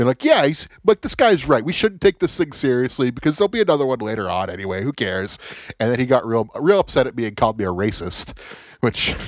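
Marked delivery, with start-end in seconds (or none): 1.0-5.4 sarcastic, mocking tone dripping with sarcasm. Retelling chiming in to make a guy feel dumb: retold sarcastic agreement.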